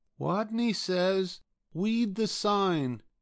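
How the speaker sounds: very high, tiny little rodent squeak. Narrator reads the game leader's line to the eager players, in a squeaky voice. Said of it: "and squeaked".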